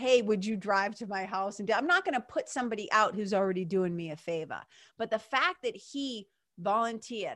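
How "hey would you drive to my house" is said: ordinary talk, nothing marked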